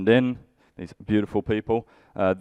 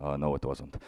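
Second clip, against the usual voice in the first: very soft, quiet, perfectly calm and unbothered; 6 semitones lower, 10 dB quieter than usual. Retelling how someone answered, imitating someone very calmly. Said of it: "very calmly like".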